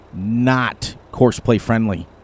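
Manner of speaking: very slow, deliberate, drawn out word by word. Warning players about the fields on a map, spoken very slowly. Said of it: "I'm going to say it very slowly".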